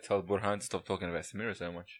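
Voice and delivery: normal talking voice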